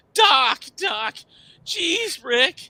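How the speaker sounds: very high, loud, slow, whiny voice. Comparing two cartoon duos, doing a whiny pubescent Morty voice. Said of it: "He got the whiny, pubescent voice".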